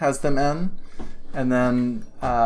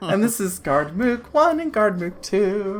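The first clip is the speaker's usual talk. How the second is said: put-on elderly grandmother voice, higher pitch; 8 semitones higher than usual. Voicing an older woman greeting the party: grandmotherly older woman voice.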